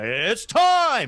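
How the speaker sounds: booming main-event announcer voice. Retelling how Bruce Buffer calls the UFC: Bruce Buffer ring announcer call. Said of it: "Bruce Buffer calls the U F C and is like".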